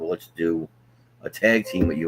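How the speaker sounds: ordinary delivery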